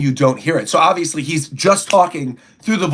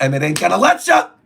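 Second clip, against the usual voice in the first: ordinary delivery, nothing marked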